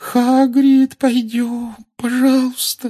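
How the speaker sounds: scared, high-pitched voice. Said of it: "сказала Гермиона высоким испуганным голосом".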